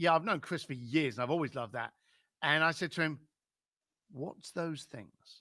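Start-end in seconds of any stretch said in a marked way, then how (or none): 4.1-5.4 hushed late-night DJ voice, much quieter, slower. Retelling a question he asked someone, in a quiet late-night DJ voice. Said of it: "Nice and quiet".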